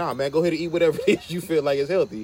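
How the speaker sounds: light, fast, teasing, jokey delivery. Retelling what a friend said during a talk about food, retelling a joking remark. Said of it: "he jokingly was like".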